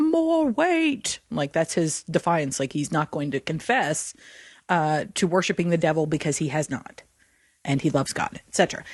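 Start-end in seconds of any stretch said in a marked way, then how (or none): 0.0-1.2 high, defiant warbling cry. Retelling a condemned man's last words under the weights, imitating a warbled cry. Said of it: "he basically warbles out".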